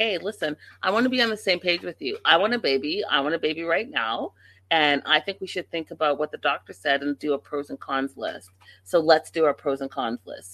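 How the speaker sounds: usual speaking voice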